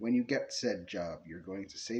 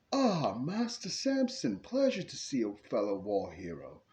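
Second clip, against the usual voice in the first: put-on swooping, sing-song British butler accent; 4 semitones higher than usual. In a role-play, butler Bibbleton answers the door to Samson, in Bibbleton's British accent. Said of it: "he says in his British accent".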